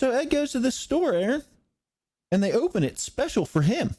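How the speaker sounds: high, increasingly worked-up delivery. Telling a story about Ed to Aaron: voice rising higher. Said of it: "your voice is getting higher".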